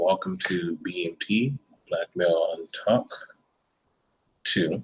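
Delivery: slow, drawn-out, low, soft, unhurried voice. Host opening a show, welcoming the listeners, said slowly. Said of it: "I don't know why I said it so slowly".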